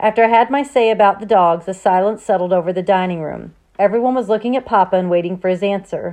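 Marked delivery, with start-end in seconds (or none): none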